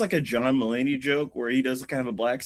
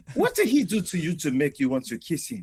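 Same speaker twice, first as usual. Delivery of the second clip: put-on speaking with a Congolese accent; 4 semitones higher than usual. Acting out a Congolese preacher against LGBTQ: put-on Congolese accent. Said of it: "it's not offensive to do the accent".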